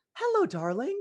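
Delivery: very high, warm, open, lovely grandma voice. Doing a quick impression of a grandmother opening her hands: imitating mom's mom, very warm. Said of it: "a very quick impressions of, like, both of my grandmothers".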